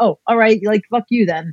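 acted-out fed-up, worked-up, angry, dismissive outburst. Showing what happens when getting angry, mock-angry. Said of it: "If I get angry, I just get all like".

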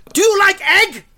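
put-on Chinese accent, very high and loud. Retell a doctor asking a vegetarian patient about her diet, imitating a loud chinese doctor. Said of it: "he just said this high volume".

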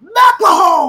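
very loud, very high, shrill yell. Showing that mcelhone is a name you yell: yelled name mcelhone. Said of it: "That's a name you yell".

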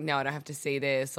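ordinary delivery

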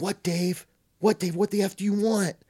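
high, loud yell. Retelling how a roommate finally got up in the dorm: imitating someone yelling. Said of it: "What are you yelling about?".

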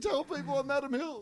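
high-pitched, weepy pleading through tears. Picturing being backstage after a bad gig: imitating crying backstage. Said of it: "while I'm backstage crying".

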